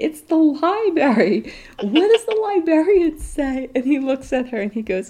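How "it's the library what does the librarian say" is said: put-on yell, higher. Retelling a mom in the library: imitating a mom yelling. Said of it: "she's yelling at her son".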